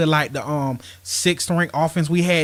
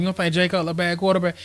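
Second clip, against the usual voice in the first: plain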